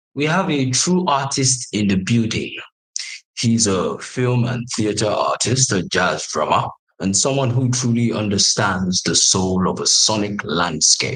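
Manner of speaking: deliberately deepened voice. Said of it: "my voice suddenly got deeper".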